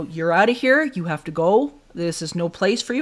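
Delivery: acted, forceful, energetic, firm delivery. Retelling ordering an unseen thing away, matching the hissing pet's energy. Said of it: "I matched his energy".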